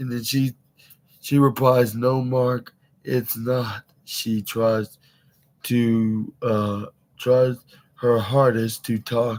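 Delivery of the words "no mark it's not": ordinary delivery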